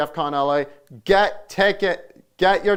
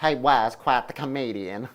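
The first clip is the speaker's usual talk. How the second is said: put-on sixties TV comedian voice; 4 semitones lower than usual. Imitating a woman's post in a Paul Lynde voice. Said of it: "I'm making her sound like, uh, Paul Lynde".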